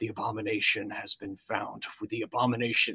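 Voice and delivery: voice of a ghostly undead half-orc. Voicing a ghostly half-orc student answering a message spell: ghostly half-orc student voice. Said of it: "you get a response of".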